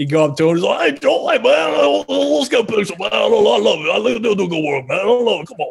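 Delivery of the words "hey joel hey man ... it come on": pitched-up voice with roughened edges. Retelling how Coach O greets you: Coach O impression. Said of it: "do you do the voice in front of him?".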